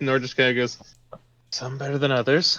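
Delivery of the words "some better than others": muttered quietly under the breath. Voicing a character answering whether they can keep a secret: muttered under his breath. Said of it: "under his breath".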